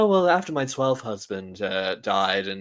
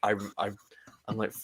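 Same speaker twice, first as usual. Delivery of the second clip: ordinary talk, nothing marked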